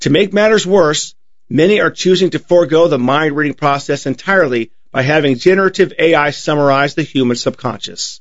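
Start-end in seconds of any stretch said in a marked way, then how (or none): none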